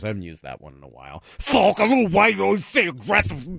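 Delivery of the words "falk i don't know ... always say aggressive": put-on high, lisping, angry character voice. Reading out a text in the old texter voice: lisping put-on texter voice. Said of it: "that's angry texter voice".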